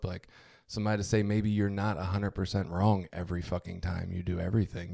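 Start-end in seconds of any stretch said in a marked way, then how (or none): none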